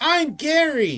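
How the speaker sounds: shouting in a goblin voice. Voicing a goblin in the game: goblin shouting. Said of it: "The goblin shouts".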